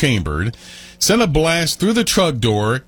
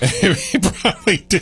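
laughing through words, higher; 7 semitones higher than usual. Responding to a remark about the dog's hurt ears: laughing while talking. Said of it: "I'm laughing. I'm sorry".

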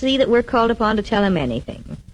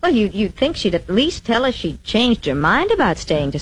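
ordinary delivery

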